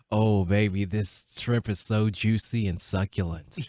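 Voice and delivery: mock seductive low voice. Repeating a dinner compliment on request, put-on deep sexy voice. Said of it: "Talk lower and slower than you usually do".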